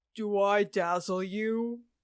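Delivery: dropped low voice, very slow and drawn out. Acting out a quote in a guessing game, the speaker uses a low voice. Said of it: "a low voice".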